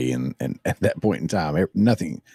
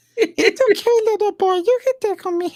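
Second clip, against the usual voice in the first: put-on puppet voice, higher and louder; 4 dB louder than usual. Imitating the Tickle Me Elmo toy talking: Elmo voice. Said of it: "Tickle Me Elmo was like".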